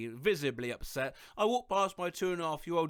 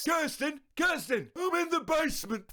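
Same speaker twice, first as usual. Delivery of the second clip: put-on very high-pitched, shrill, squawked old-man shout; 10 semitones higher than usual. Sharing what a rescued grey parrot would call out, imitating a parrot shouting like an old man. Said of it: "would shout in an old man's voice".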